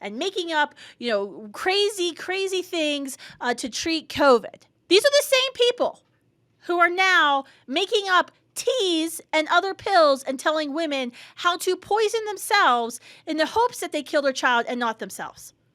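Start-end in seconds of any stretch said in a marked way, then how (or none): 4.9-15.5 frustrated, fired-up, agitated, worked-up delivery. Discussing an article, the speaker talks worked up. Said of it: "I'm a little worked up about this, if you can tell".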